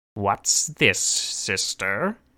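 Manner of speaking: slimy, foul-sounding voice. A foul soul addresses the woman who offered him a sword, in a slimy voice. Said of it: "the foul soul said in its slimy voice".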